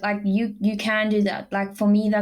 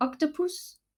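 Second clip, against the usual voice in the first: octopus said high and soft, mocking. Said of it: "That's what you were saying".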